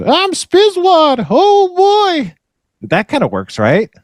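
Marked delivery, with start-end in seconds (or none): 0.0-2.3 put-on, high, little gnome character voice. Workshopping character voices, trying out the gnome voice. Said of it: "What about the what was the gnome voice?".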